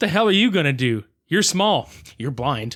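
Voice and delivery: ordinary talk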